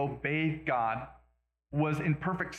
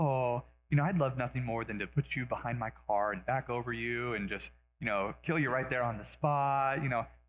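tender, sweet-natured, gentle and kindly talking; 4 semitones lower than usual. Retelling a video of a man talking to a chihuahua, imitating gentle soft talking. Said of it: "really gently, softly talking".

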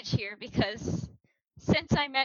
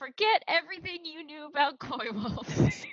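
salesy TV infomercial announcer voice; 4 semitones higher than usual. A co-host riffs on how the other started this, in infomercial announcer voice. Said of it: "like an infomercial".

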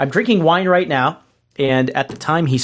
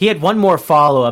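normal talking voice

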